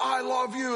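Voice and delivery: high yell at the top of the voice. Imagining saying good night to a loved one: pretend yelling at top of voice. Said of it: "if you're just yelling".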